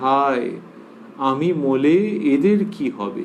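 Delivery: normal talking voice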